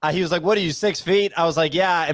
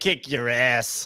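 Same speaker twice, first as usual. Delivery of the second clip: put-on New Jersey accent on every word; 6 semitones lower, 4 dB quieter than usual. Imitating another speaker's tough boast: imitating a New Jersey accent. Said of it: "the New Jersey accent there".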